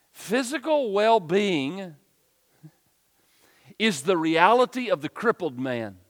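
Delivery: very slow, deliberate delivery, each word laid out carefully. Teaching about the Word of God, the speaker repeats his point, saying it slowly. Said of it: "So let me say it slowly".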